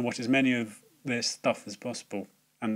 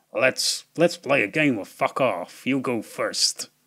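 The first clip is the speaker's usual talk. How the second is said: put-on American accent, slow, loud and drawn out; 5 dB louder than usual. Mocking a film hero's quip on the phone to the villain, Gerard Butler American accent. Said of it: "Gerald Butler with an American accent".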